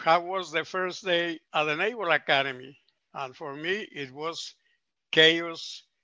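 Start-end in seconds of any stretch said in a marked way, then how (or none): none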